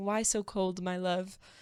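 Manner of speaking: put-on whisper. Retelling a scene of someone talking to frozen corn: imitating Niles whispering.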